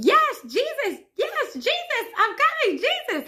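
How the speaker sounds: very high, frenzied, swooping, loud screaming cries. Retelling a dream of seeing Jesus at the window: imitating own screaming. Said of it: "I start immediately screaming".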